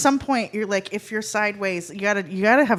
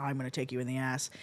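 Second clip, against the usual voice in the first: put-on sexy tone, much lower and quieter; 8 semitones lower, 13 dB quieter than usual. Speaker retelling a line a man kept saying, in a put-on sexy tone. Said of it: "that was a little sexier what you just did".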